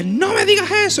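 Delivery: put-on shouting. Speaker recalling how they answered someone back then: retelling a yell.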